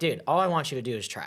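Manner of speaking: usual speaking voice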